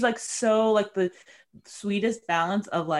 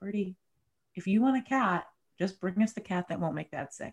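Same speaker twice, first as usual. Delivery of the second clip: soft, secretive half-whisper under the breath; 5 dB quieter than usual. The speaker retells half-whispering to Birdie on a walk in the woods, retelling a half-whisper. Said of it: "I just whispered to her".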